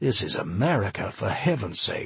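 ordinary delivery

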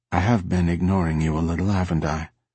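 ordinary delivery

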